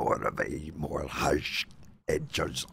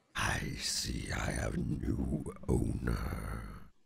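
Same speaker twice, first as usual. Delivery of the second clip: rough, rumbling, creaky creature voice; 6 semitones lower, 4 dB quieter than usual. Newly attuned, the whip speaks to its new owner in a Dragon's Tongue voice. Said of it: "keep doing that voice every time he speaks".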